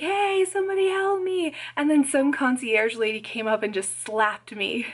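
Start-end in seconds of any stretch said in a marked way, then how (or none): 0.0-1.5 shrill, very high scream. Retelling a dream of being ignored by staff, re-enacting own screaming. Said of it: "so I was screaming at them".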